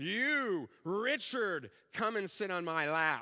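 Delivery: booming put-on voice. Retelling how Santa Claus called Richard to his lap, retelling a booming Santa voice. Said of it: "in his booming voice".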